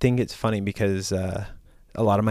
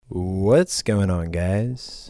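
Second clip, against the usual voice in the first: smooth jazz style delivery. Greeting listeners at the start of an episode: smooth jazz style delivery. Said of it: "That was my smooth jazz rendition of it".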